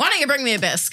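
abrupt, high-pitched screaming. Quoting a rude customer's order as Heather described it, retelling a scream. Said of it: "Just fucking screams it".

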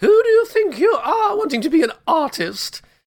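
very high, poorly done posh British accent. Imagining your inner critic as the Queen of England, lousy Queen of England impression. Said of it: "That's a lousy impression of the Queen".

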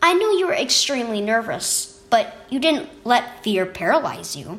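plain reading voice

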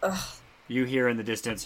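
ordinary delivery

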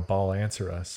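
ordinary talk, nothing marked

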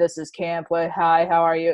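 normal talking voice

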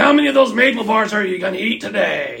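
put-on loud, high yell, calling out. Retelling how someone yelled out during a meeting, retelling a yell across the meeting. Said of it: "Eldred just yells out".

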